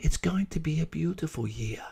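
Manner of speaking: lovely, sweet-sounding, soft, beautiful voice. Retelling a lady in line answering a question, imitating a beautiful voice. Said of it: "in the most beautiful voice".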